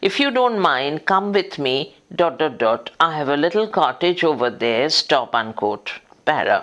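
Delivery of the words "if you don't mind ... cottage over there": ordinary talk, nothing marked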